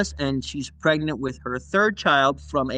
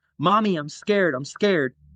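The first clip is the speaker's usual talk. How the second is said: put-on terrified, pleading little child voice; 3 semitones higher than usual. Retelling a terrified boy cuddled in the bed corner: imitating a terrified child. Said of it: "he was terrified".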